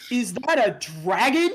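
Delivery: very loud, slow, high shout. Narrating a scene where a group of students shout: students shouting. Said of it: "a group of students shout".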